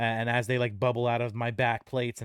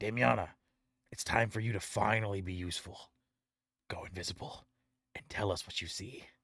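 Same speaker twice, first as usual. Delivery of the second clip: hushed, quiet whisper; 3 semitones lower, 6 dB quieter than usual. Speaking in character to Damiana, asking her to scout: whispering in character. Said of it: "I looked at Damiana and I whisper".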